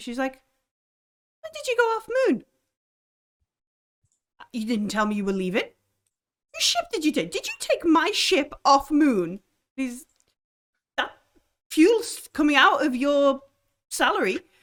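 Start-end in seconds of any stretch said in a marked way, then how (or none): 1.4-14.4 loud, cross, scolding shout with swooping pitch. Voicing an old lady who calls someone back: character shouting crossly. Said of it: "She shouts to him".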